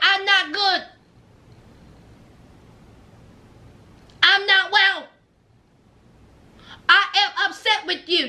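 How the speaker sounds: stiff, robotic, machine-like, mechanical delivery.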